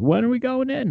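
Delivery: acted, shrill, very high scream. Retelling how the speaker's retired uncle screamed at them, imitating a scream. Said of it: "he screamed at me like".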